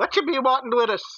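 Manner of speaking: very high, loud calling-out shout. Hiding high up in a room, calling to people who might shoot: yelling out. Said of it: "when I yell out".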